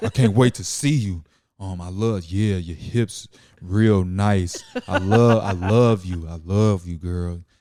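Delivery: put-on sexy bass voice. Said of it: "put some bass".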